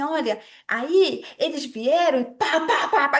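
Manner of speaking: slow, hammed-up, theatrical dramatized reading. Retelling acting out a history lesson for a daughter: imitating theatrical storytelling. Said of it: "fiz um teatro, parecia uma doida".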